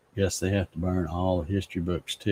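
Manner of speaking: ordinary talk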